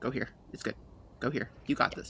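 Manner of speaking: hushed, soft, reassuring, encouraging whisper. Retelling to Yelena what he whispered to you: retelling a whisper. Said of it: "he whispers".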